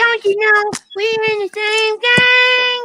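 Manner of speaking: put-on impression, belted out high. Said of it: "Miss Chalet impersonation".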